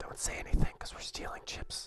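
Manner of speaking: quiet, playful whispering. Joking to chat about stealing chips: playful whisper. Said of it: "Gotta whisper real quietly".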